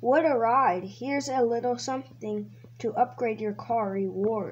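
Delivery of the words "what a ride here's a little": usual speaking voice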